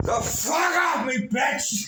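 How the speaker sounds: mock furious yell, very high, loud and drawn out. Retelling cursing at a security guard who grabbed the shoulder: imitating angry shout. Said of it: "I was real angry".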